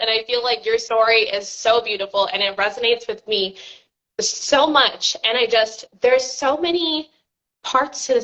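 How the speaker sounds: tearful voice, choking up, on the edge of crying. Speaking directly to the person whose story moved them; choking up, near tears. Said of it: "I'm literally gonna cry again".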